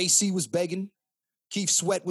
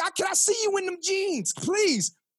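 very high-pitched, begging, pleading voice; 12 semitones higher than usual. Acting out how men used to beg to see a woman in jeans: imitating a man begging.

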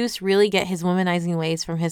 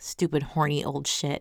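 mock mutter, lower pitch and quieter; 4 semitones lower, 5 dB quieter than usual. Recapping a story scene, imitating Persephone muttering to herself. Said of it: "muttering to herself".

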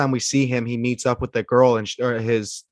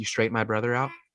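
put-on low sinister voice, much quieter; 7 dB quieter than usual. Retelling the moment he speaks to Mo Green: imitating a low sinister voice. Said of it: "when he like in his low voice to Mo Green".

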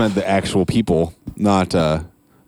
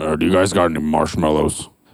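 put-on grumpy old-man accent; 4 semitones lower than usual. Retelling a customer's question at the store, in mock grumpy old man voice. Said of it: "Say it in a grumpy old man accent".

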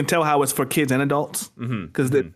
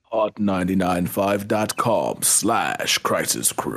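put-on robot leader voice, lower pitch; 6 semitones lower than usual. Giving the web address after being asked for it: Optimus Prime voice. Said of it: "in your best Optimus Prime rollout voice".

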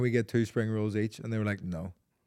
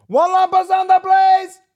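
mock waiter shout, much higher, louder; 15 dB louder than usual. Describing a waiter calling orders from the table to the kitchen: imitating a waiter shouting. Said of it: "he shouts from the table to the kitchen".

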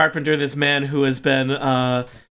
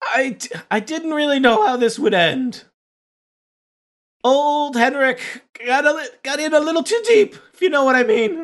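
put-on old craftsman character voice, much higher pitched; 10 semitones higher than usual. A game master, as the old coffin maker, answers the adventurers' questions. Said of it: "This is the old carpenter coffin maker here".

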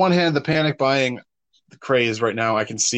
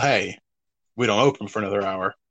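normal talking voice

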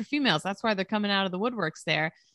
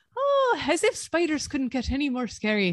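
performed Irish accent throughout, pitched up; 5 semitones higher than usual. Reading a requested script aloud, in an irish accent. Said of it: "Chaps wanted me to do this in an Irish accent".

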